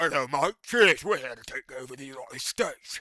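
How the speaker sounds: loud put-on British accent, laid on thick. Joking about what would happen if the British came, in a mock British accent. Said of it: "If the British came".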